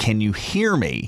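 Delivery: ordinary talk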